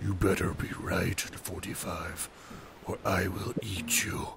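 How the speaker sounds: low grumbling voice. Imitating the voice that answers forty-five, in a deep grumbling voice. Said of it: "deep grumble like".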